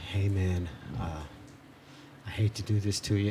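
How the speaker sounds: talking very low, hushed, barely audible mutter. Retelling a robber's opening words at the store counter: imitating someone talking low. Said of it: "talking real low".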